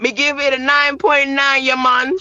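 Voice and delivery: Jamaican accent, put on. Giving a one-to-ten rating when asked, in a Jamaican accent. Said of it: "your best Jamaican accent".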